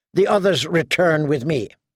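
ordinary delivery, nothing marked

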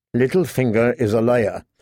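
ordinary delivery

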